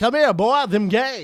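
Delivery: loud, drawling, big cartoon rooster voice. Riffing on a repeated catchphrase with another speaker, in a Looney Tunes rooster voice. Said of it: "I sound like the giant rooster from uh, Looney Tunes".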